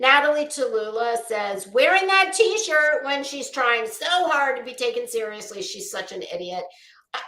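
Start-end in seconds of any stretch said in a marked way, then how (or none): none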